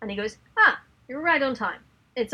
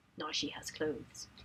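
acted dark, foreboding near-whisper; 7 semitones lower, 15 dB quieter than usual. Quoting the SAS guy's line to the others, retelling it ominously. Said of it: "looks off into the distance and says ominously".

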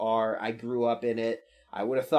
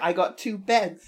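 put-on British accent, higher pitch; 8 semitones higher than usual. Retelling what a character said on the show: Kurt with a British accent. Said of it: "I don't know why he has a British accent".

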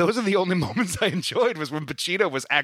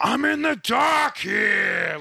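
high scream, drawn out very slowly; 7 semitones higher than usual. Retelling a movie scene where he's screaming: imitating Pacino screaming. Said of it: "and he's screaming".

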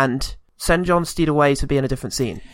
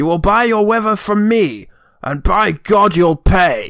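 higher pitch, slower pace, hammed-up delivery; 6 semitones higher, 5 dB louder than usual. Retelling a villain's threat from a film: Sean Connery voice. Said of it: "How he says it".

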